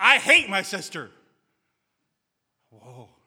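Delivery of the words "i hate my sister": very loud, forceful shout. Retelling what a man said the third time, retelling a really loud shout. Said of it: "in a real, real loud voice".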